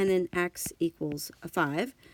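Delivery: ordinary delivery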